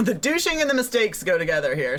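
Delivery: ordinary delivery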